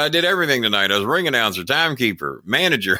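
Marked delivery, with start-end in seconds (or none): none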